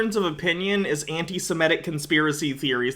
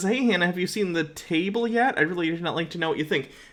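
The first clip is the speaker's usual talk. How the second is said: plain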